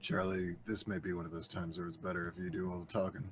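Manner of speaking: low, very quiet, under-the-breath aside. Speaking in character to a companion named charlie: said under the breath. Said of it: "I say, like, under my breath to Charlie".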